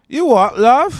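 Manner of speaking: very high, loud, shrill, put-on British accent. Two hosts agree to both do their british accents; british accent. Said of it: "we'll just both do our British accents".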